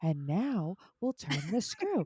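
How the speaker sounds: put-on calming voice. Imitating a father-in-law who repairs clocks on YouTube: imitating Mark's calming voice. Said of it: "most calming voice ever".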